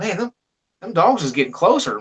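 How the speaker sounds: ordinary talk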